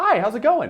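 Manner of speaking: very high, nervous voice. Demonstrating how you sound nervously approaching a woman: nervous high voice. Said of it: "You'll get real high".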